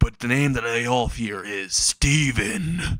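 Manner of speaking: threatening, sinister, menacing villain voice. Narrating a story, voicing the slime's line; menacing voice. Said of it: "he says in a menacing voice".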